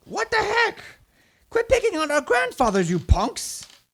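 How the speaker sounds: angry yelling in a put-on gnoll voice. Voicing a gnoll who yells at the party: gnoll yelling angrily. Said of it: "starts yelling at all of you".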